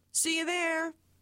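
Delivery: high, called-out shout from a distance. Retelling how she left for the hospital on foot: imitating her shouting. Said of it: "she was halfway to the hospital on foot shouting".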